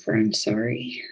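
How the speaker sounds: soft, barely-there half-whisper. Petting the horse in character and apologizing to it: half-whispering. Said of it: "I pet the horse and I whisper".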